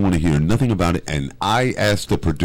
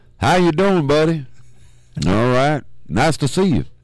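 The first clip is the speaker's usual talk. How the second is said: put-on very high Southern accent from Marion, Alabama; 10 semitones higher than usual. Showing off an accent to the others in the conversation, in a Marion accent. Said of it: "That's my Marion accent".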